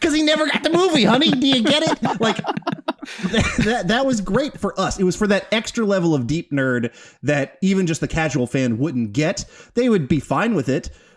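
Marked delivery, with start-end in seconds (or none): 0.0-2.2 high, fast know-it-all explaining, spelled out. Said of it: "And I'm like".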